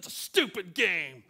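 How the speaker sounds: put-on loud, slow angry outburst. Retelling throwing down the controller in frustration: retelling his angry outburst. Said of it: "and I got mad".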